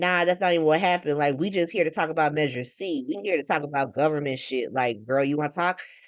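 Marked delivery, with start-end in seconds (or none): none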